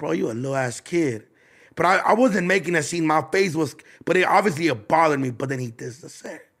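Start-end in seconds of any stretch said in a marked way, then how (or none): 0.0-1.2 quiet under-the-breath mutter. Retelling his reply to a bigger, older guy's remark: muttering under his breath. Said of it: "under my breath".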